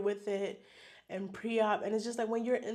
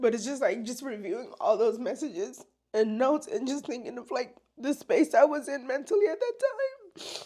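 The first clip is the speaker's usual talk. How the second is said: tearful, raised voice, talking through tears; 4 semitones higher, 5 dB louder than usual. Recalling being terrified with only seven months with the baby: crying while talking. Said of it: "I told myself I wasn't gonna cry".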